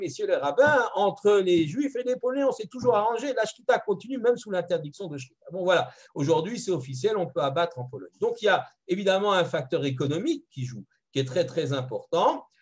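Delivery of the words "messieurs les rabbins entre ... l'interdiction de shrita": put-on French spoken with a higher-pitched Polish accent. Quoting the Polish ambassador during a visit: Polish accent. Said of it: "avec son accent polonais".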